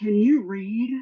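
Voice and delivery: acted, emphatic, pointed, each word pressed home. Retelling what the bank teller asked: imitating someone speaking very loudly. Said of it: "She said very loudly".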